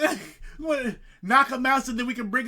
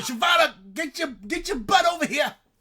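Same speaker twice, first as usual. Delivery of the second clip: high, urgent, loud calling out; 6 semitones higher than usual. Player in a game session, in character, calling to shyvana, yelling. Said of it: "And I'm yelling".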